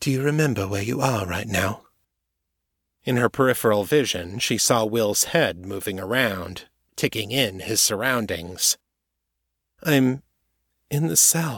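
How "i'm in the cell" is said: drowsy, half-awake, slow, slightly high. A captive man, asked if he remembers where he is, answers drowsy. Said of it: "sounding drowsy".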